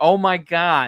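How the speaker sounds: acted shouting. Retelling a reaction to a movie scene: imitating own screaming. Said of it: "I was screaming at the movie".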